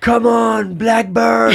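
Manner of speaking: mock yelling. Speaker recounts a man yelling while his girlfriend gave birth, retelling a yell. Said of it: "he would yell".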